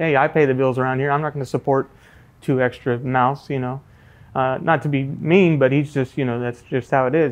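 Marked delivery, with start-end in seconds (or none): none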